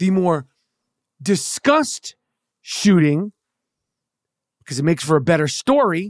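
low, sardonic, sarcastic aside. A podcaster discussing a shooting in the news, sarcastic. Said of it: "obviously I'm being sarcastic".

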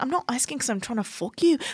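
put-on Irish accent. Imitating Ben talking to women, in an Irish accent. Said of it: "I'm doing, like, an Irish accent".

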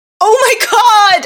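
high, fed-up, exasperated blurted outburst. Retelling a moment stuck in a line that would not move: retelling an exasperated loud outburst. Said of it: "So I was so exasperated".

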